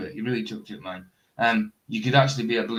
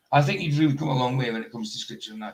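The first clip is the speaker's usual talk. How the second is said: plain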